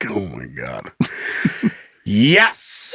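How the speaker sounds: low, very slow, fed-up, put-upon annoyed voice. Retelling a man's reply to a woman asking for a verbal yes, imitating an annoyed man. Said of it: "Like you're so annoyed".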